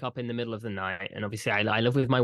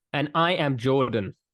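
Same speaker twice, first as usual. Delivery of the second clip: odd, unusual, weird cadence; 3 semitones higher, 5 dB louder than usual. Podcast co-host introducing themselves at the show's start, weird cadence. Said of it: "ended up putting a weird cadence on it".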